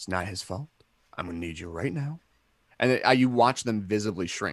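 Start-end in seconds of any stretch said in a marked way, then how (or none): 0.0-2.2 calm, toned-down low-key voice, lower and quieter. Retelling calming down a man who is freaking out: imitating own calm toned-down voice. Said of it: "I just kinda go like this".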